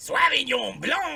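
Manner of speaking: very high, shrill, loud, angry-sounding fake German accent. Joking about pronouncing a wine name, trying a put-on German accent. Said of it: "Try and pronounce it with a German accent".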